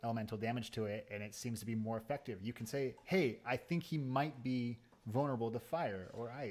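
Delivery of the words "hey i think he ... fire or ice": usual speaking voice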